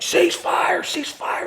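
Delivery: hasty, urgent, screamed shout. Retelling a man suddenly screaming a command at the shooters, retelling a scream. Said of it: "I just hear him screaming".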